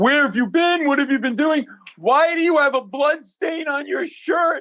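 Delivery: put-on very high, furious screaming, out of control. Retelling how the senior partner yelled at them in a conference room, imitating someone screaming. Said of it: "The senior partner was like screaming".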